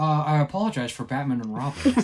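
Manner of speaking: sleepy, half-asleep delivery. Showing the interview the voice came from: sleepy Joel Schumacher impression. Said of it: "the one interview I watched to get this voice".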